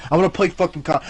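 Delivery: ordinary delivery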